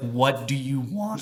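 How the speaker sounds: put-on angry, unwelcoming, mad tone. Retelling how the pizza place staff greeted them: imitating someone mad. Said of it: "they were so mad that we walked in".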